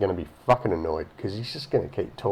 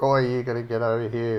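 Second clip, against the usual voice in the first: acted agitated, panicked yelling; 3 semitones higher than usual. Retelling a mate's late-night phone call, imitating a mate yelling. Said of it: "just fucking yelling into the phone".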